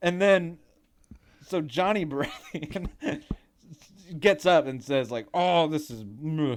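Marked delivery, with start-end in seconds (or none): 5.3-6.6 mock pouty character voice. Recapping a scene where Johnny Baratheon gets up and answers; pouty Johnny Baratheon impression.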